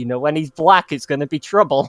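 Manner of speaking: put-on gamer voice with a joking tone. Retelling a gameplay moment, imitating Phil. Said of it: "and then he goes".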